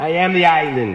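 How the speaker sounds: put-on Jamaican accent. Having told listeners to just go with it, a speaker talks in a Jamaican accent. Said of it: "when you hear me speaking a Jamaican accent".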